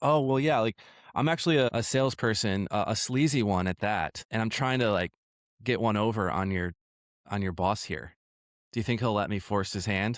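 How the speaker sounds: normal talking voice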